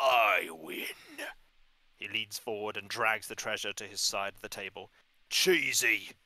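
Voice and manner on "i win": icy, unfeeling, cold and loud. Narrating a scene, voicing a man with an eye patch at a card table: cold. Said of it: "A man with an eye patch says coldly".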